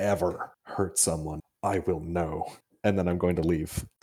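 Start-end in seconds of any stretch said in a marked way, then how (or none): 0.0-2.5 slow, soft, hushed, menacing half-whisper. Threatening a captured prisoner at knifepoint in character: half-whisper. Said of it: "just whisper".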